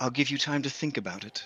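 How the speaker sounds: close, hushed, secretive half-whisper, leaning in. The creature leans in to a player's character before disappearing, half-whispering. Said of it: "leans in and whispers to you".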